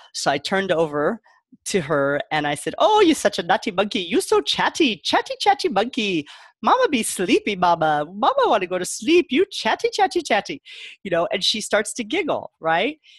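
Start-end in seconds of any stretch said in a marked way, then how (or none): 2.8-10.6 teasing, playful, high-pitched put-on Jamaican accent. Retelling teasing a chatty kid at sleep time: put-on Jamaican accent. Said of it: "what I call a Jamaican accent".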